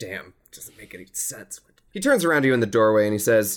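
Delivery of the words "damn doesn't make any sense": whispered mutter under the breath. A game master voices a man trying keys at a doorway: muttering to himself. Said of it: "Muttering to himself the whole time".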